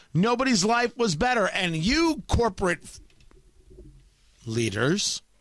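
voice catching, a little choked, mid-line. Mid-rant, the speaker gets choked up. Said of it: "little choked up right there".

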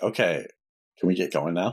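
ordinary delivery

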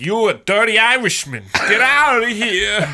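very high-pitched, very slow, drawn-out voice. Acting out the men telling off a doubter: John Travolta voice. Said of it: "they all talk like John Travolta".

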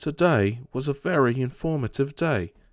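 cartoon wallaby voice. Speaker discussing a favorite Nickelodeon show, quoting Rocko in his little Australian wallaby accent. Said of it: "in his like little Australian wallaby accent".

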